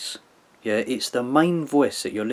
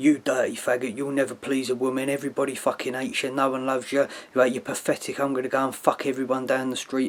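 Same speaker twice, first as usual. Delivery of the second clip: put-on, furious, angry girlfriend-style rant. Describing what plays in the right ear, as a mock angry girlfriend. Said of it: "angry girlfriend going".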